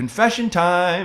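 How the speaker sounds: put-on cheerful voice. Speaker describing what they still say to themselves, in a mock-happy voice. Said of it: "in this happy like voice".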